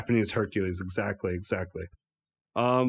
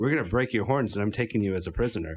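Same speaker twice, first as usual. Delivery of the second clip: ordinary delivery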